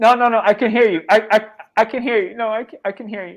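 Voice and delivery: very loud, high, acted crying and sobbing wail. Role-playing an emotional friend who is being scolded: acted crying. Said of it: "We don't start crying".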